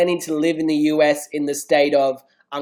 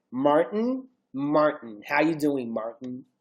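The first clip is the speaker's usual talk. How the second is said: put-on American accent, quieter; 7 dB quieter than usual. Asked to say his own name in an American accent, American accent. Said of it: "say your name in American accent".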